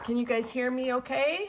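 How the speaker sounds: called-out voice. Checking whether viewers can hear, yelling. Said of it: "I'm yelling".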